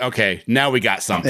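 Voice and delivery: ordinary talk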